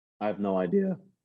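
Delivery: low voice breaking and cracking. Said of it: "You hear that voice crack".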